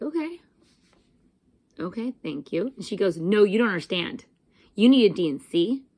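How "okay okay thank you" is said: very even, composed, soft and calm voice. Retelling an answer to this woman, retelling a calm reply. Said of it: "And I very calmly was like".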